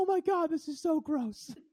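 piercing, very high, very loud yell. A comedian recalling a steakhouse show, imitating a lady yelling out. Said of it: "some like lady yelled out".

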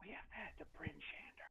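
hushed whisper into the ear. Leaning over to another character at a bar: whispering in character. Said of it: "I whisper into her ear and I say".

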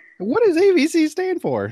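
put-on very high, cracking, breaking young child voice. Voice artist imitating how he sounded as a nerdy young kid: cracking kid voice. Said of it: "Did your voice crack too?".

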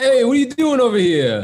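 put-on New York Italian accent. Discussing who should voice the turtles, doing Raphael: New York Italian accent. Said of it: "Raphael was so New York Italian".

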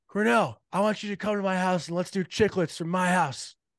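high, loud, acted-out screaming yell. Retell how a man called out to you across the bar, imitating someone screaming. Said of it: "he started screaming like".

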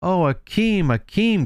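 high, trembling, overjoyed cry of joy. A snow child calling a man's name as she hugs him, crying out, trembling with joy. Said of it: "cried Masha, trembling with joy".

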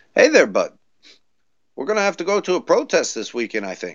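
put-on Canadian accent. Retelling what canadian friends say about a protest, put-on canadian accent. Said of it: "you hear from the Canadian friends".

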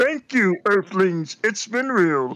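high cartoon Martian spaceman voice. Signing off, leaving everyone with a Marvin the Martian impression. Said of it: "my Marvin the Martian impersonation".

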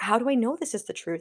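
normal talking voice

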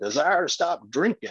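stretched-out Texas drawl. Retelling what a guy from Texas said: imitating a Texas drawl. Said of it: "so he had that drawl".

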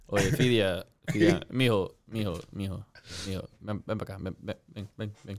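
halting, stammering, stuttering with words repeated. Imagining the speaker's own dad calling them over: imitating a stuttering dad. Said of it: "he stutters a lot".

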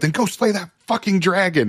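acted yelling. Retelling urging a trainee at a fire: imitating own yell. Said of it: "I've never been yelled at like that before".

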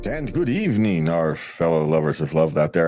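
vampire-style voice. Host greeting the show's listeners, in a vampire voice. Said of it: "I don't know why I'm talking like a vampire".

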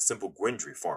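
ordinary delivery

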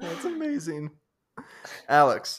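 voice deliberately going high and cracking. Reacting to a joke, exclaim it with a high voice crack. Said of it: "I just couldn't tell with the voice crack".

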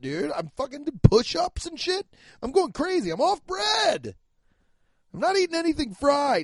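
very high-pitched, jacked-up, pumped, rattled ranting talk. Talking about himself right now, talking like a jacked-out man. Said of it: "listen how I'm talking right now. I'm talking like a man who's jacked out".

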